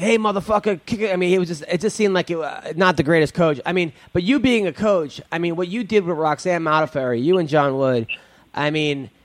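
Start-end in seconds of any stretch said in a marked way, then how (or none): 0.0-1.1 mimicked yell, higher. Talking about a fighter's coach, retelling what he yelled, retelling a yell. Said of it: "he was yelling like".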